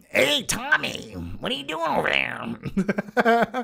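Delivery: rough, creaky, drawn-out voice. Answering a viewer question about Cape Fear: shitty Nick Nolte impression. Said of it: "my shitty Nick Nolte impression".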